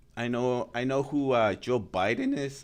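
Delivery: voice breaking and cracking on a word. Retrying after being told to try again, voice cracking. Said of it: "Oh, my voice cracked".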